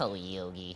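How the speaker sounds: nasal cartoon bear voice. Explaining how the cartoon sidekick sounds: nasally Boo Boo voice. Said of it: "Boo Boo was always just kinda like".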